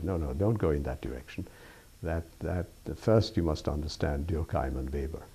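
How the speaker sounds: normal talking voice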